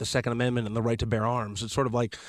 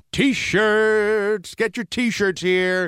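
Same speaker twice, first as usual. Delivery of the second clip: yelling like a barker; 9 semitones higher, 6 dB louder than usual. Recalling a t-shirt seller by a popcorn machine: carnival barker yell. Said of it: "He was like a carnival barker".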